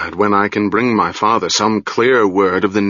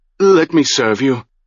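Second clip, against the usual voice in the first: stammering, stuttering, voice shaking, much higher pitch; 5 semitones higher than usual. Arran kneels in haste before his lord and speaks, stammering, voice shaking. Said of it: "stammering, ... his voice shook".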